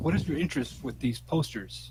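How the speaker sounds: low, hushed, dropped voice. Retelling questioning a woman about her posters: lowered voice. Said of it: "I lower my voice".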